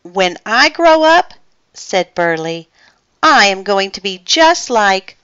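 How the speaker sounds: ordinary delivery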